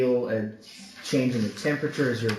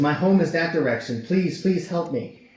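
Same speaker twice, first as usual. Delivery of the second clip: high, tearful, panicked, frantic crying plea; 5 semitones higher, 4 dB louder than usual. Voicing a mother running out of an inn to ask for help, crying, frantic plea. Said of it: "still crying, still frantic".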